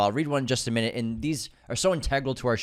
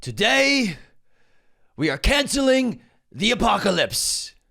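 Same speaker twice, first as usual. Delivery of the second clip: very slow, high-pitched, raised, drawn-out delivery; 11 semitones higher, 5 dB louder than usual. Doing a movie quote impression of a line: Idris Elba voice. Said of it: "That is Idris Elba in Pacific Rim".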